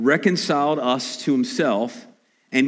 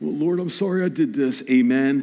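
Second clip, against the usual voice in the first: perfunctory, offhand rote delivery, 'amen' drawn out. Mocking a careless prayer said before coming to the table: imitating a perfunctory prayer. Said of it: "not perfunctory prayers".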